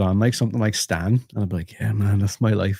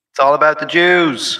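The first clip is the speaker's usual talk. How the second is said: loud, high put-on scream, stretched very slow; 7 semitones higher, 7 dB louder than usual. Shouting a line another speaker asked to hear: fake screaming. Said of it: "just scream".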